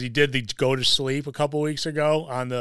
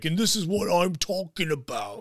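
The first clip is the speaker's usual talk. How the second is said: bad, mismatched put-on generic UK accent, pitched up; 5 semitones higher than usual. Retelling Drew McIntyre's reply to someone online about the Royal Rumble poster, a bad Drew McIntyre impression. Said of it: "you went with a completely different UK accent".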